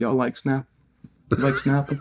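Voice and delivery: casual, offhand, tossed-out delivery.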